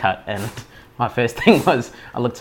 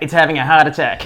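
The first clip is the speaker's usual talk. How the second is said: acted screaming, high and loud; 5 semitones higher, 5 dB louder than usual. Telling how their first bird died in their hand, acting out their past self: retelling own scream. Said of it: "I sort of screamed out".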